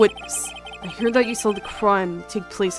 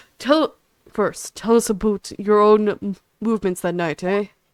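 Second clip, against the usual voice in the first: attempted put-on Canadian accent; 6 dB louder than usual. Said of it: "I can't do a Canadian accent!".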